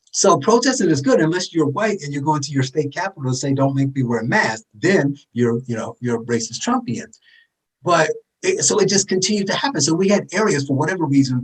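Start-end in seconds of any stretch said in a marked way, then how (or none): none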